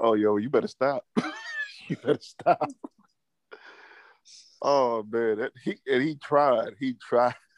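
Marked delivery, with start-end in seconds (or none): 0.0-2.6 mock voice dripping with disdain, swooping. Retelling how James reacted to the podcast ending: imitating James, disdainful. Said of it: "just to hear the disdain in James' voice".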